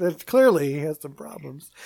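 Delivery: ordinary talk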